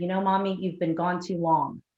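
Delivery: ordinary delivery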